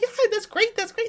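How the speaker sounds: voice pushed way up, very high-pitched. Speaker tries out the extra Emily impersonation: high-pitched Emily impersonation. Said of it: "I'd have to be really high pitched".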